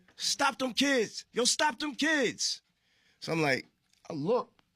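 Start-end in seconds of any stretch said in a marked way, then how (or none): 0.2-2.6 very high, shrill screaming yell. Telling how somebody behind you was chasing you, retelling a scream. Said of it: "I hear somebody screaming behind me".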